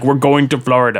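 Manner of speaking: badly done put-on Russian accent. Telling a story about a friend's father, the speaker quotes him in a bad russian accent. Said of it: "really bad Russian accent".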